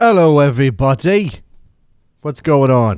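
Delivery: put-on English accent, said off the cuff. Host opening with a greeting to everybody, English accent. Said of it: "an English accent off the top there".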